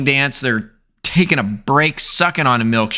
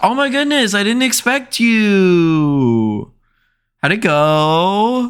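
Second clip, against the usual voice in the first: very slow, high, drawn-out fake astonishment; 8 semitones higher than usual. Imitating the mom greeting Josh: imitating the mom's fake surprise. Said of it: "She's like".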